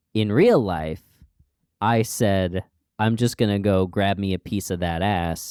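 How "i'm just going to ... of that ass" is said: plain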